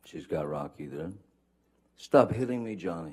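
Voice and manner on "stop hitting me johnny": mock frantic, high, upset, freaked-out shriek of distress. Retell what she screamed at johnny while still on the phone, imitating a freaked-out, high-pitched scream. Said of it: "she's screaming in in her best um".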